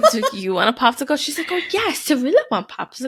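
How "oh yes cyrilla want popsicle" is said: put-on high, sing-song little-kid baby talk. Telling how Cyrilla talks; imitating Cyrilla. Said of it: "Cyrilla's voice is like great too".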